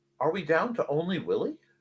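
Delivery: ordinary talk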